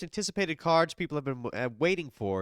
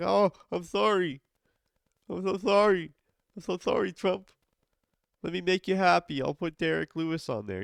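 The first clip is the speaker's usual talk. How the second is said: mocking, sarcastic, apologetic, pitched-up voice; 5 semitones higher than usual. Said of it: "And he's like".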